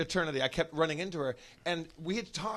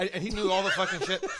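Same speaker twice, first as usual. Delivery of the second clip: ordinary talk, nothing marked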